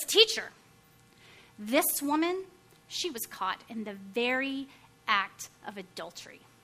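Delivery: very loud, clear, strong, commanding voice. Speaker retelling a Pharisee addressing the teacher so everyone can hear: clear, strong voice. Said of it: "in a very clear, very strong voice".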